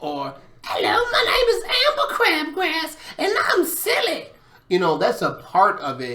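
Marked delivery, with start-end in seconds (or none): 0.6-4.3 very high-pitched, silly voice. Explaining role playing, giving an example of a funny voice, funny Amber Crabgrass voice. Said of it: "talking in funny voices".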